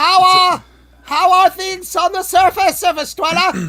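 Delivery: very shrill, very loud, high-pitched yell. You call from your basement to a surface dweller, loud yelling. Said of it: "Kind of loud right now".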